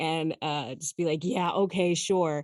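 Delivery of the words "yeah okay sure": put-on sarcastic, pessimistic delivery. Describing her conspiracy radio host role, then doing a put-on sarcastic pessimist tone. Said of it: "let my inner pessimist out".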